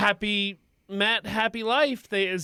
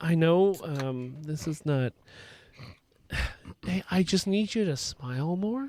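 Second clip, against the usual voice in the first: whispered, lower pitch; 4 semitones lower, 4 dB quieter than usual. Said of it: "I'm gonna whisper in River's ear".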